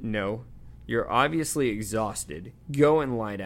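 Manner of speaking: ordinary talk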